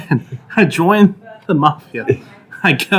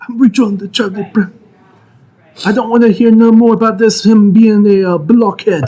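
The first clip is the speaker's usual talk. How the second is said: Italian American wiseguy mobster voice, pitched up; 6 semitones higher, 4 dB louder than usual. Asked what he'd do as a godfather, the speaker does a mobster impression. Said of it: "bust out your mobster impression".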